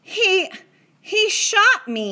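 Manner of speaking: very high shocked outburst. Patrick, after a tiny speck is squeezed from his skin: shocked. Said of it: "Patrick got out again in a shocked voice".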